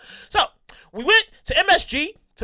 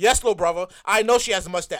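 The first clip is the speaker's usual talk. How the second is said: mock flat, very low deadpan; 8 semitones lower than usual. Retelling his sister's answer to his question, imitating sister's deadpan reply.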